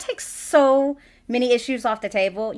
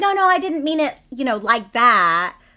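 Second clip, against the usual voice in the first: play-acted, passive-aggressive, defensive protesting tone. Retelling a film character's apology to her mother: imitating a passive-aggressive apology. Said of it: "she's passive aggressive, but she's trying not to be".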